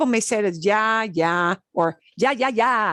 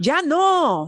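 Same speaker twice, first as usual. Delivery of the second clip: higher-pitched, fed-up, scolding tone; 5 semitones higher than usual. Explaining how the word can sound negative, demonstrating a mom yelling at a kid. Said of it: "A mom yelling at a kid".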